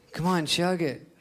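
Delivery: pushy, goading, egging-on voice. Speaking to an audience, impression of self on a high-school date. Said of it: "Here's an impression of me on a date in high school".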